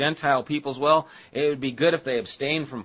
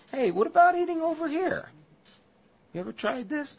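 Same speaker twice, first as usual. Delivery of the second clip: inviting, put-on Italian accent, pitched very high; 14 semitones higher than usual. Voicing a man's invitation while discussing a story, slipping into an Italian accent. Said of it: "I'm kind of getting an Italian accent".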